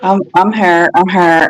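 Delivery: drowsy, sleepy, half-awake, just-woken voice. Unmuting on a call after being asked if falling asleep: sleepy voice. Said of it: "I still got the sleepy voice".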